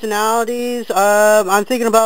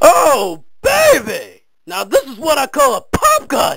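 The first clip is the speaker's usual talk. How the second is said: crazed, unhinged psycho voice, high and swooping; 6 semitones higher, 4 dB louder than usual. Doing a voice test for a psycho with a gun: psycho-with-a-gun voice. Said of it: "Psycho with a gun".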